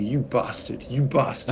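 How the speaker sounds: ordinary talk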